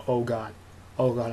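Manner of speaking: ordinary talk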